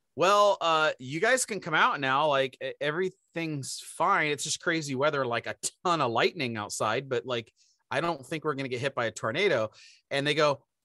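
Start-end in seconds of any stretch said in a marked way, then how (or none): none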